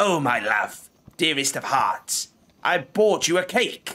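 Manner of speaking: put-on croaked old crone voice. Narrator reads the hag's line to the player, in a croaking hag voice. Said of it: "The hag croaks".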